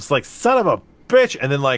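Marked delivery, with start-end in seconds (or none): 0.3-1.4 put-on outburst, higher in pitch and louder. Retelling own cursing while tie-dyeing: imitating own angry swearing. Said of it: "a grim potty mouth about the whole thing".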